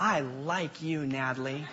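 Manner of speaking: very hushed, soft, slow, drawn-out innocent tone. Retelling a reply to an angry little sister: imitating own innocent tone. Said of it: "smile innocently and go".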